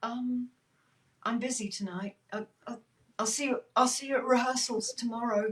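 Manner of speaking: very small voice tripping over words. Recounting his reply on the phone after a horrific silence, in a very small voice. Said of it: "a very small voice going".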